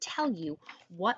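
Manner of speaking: plain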